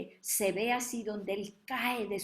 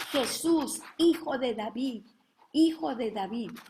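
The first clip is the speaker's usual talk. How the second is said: loud, repeated shouting cry; 4 semitones higher, 7 dB louder than usual. Retelling how the blind man called out to Jesus, reenacting a shout. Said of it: "empieza Bartimeo a gritar".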